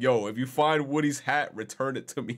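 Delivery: slow, flat, grave, dead-serious tone. Imagining someone sending a voice message, imitating dead-serious delivery. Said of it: "imagine somebody sending you a voice message and that just sound mad serious".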